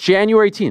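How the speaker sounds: quick-fire, very high-pitched delivery. Showing others how the date sounds when spoken: saying it fast. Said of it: "I'm saying it fast".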